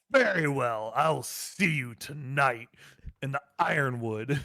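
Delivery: openly hostile, aggressive tone. Voice acting a character who throws down the gauntlet, in an aggressive tone. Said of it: "I'm going to take a very aggressive tone to it too".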